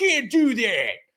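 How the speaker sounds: high, shouted mock screaming rant. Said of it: "scream at my TV like".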